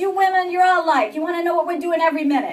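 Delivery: put-on New York accent. Quoting what a man told her, in a New York accent. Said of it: "now I've become New York".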